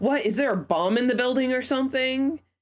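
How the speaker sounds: mock snide, disbelieving child voice. Retelling what a kid asked the teachers, imitating a sarcastic kid. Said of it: "like sarcastically asked".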